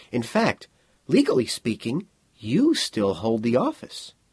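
ordinary delivery

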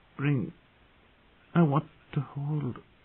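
put-on drowsy, slurring half-words. Reading a woman's murmured words as sleep comes over her; slurred and drowsy. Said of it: "her voice slurred and drowsy".

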